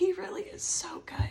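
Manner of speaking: crying, tearful, weeping through the words. Speaker sharing what has carried them through this time, crying. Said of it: "I know I'm crying right now".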